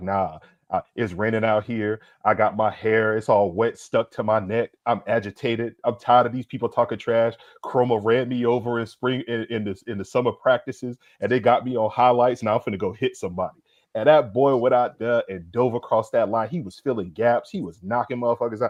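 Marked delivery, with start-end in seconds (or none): none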